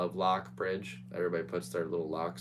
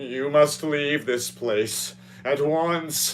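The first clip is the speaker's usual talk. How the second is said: very loud, stagey, dramatic delivery; 8 semitones higher, 10 dB louder than usual. Retelling a gliding figure's warning to him, for dramatic effect. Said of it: "for dramatic effect".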